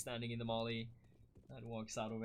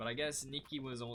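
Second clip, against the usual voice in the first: ordinary talk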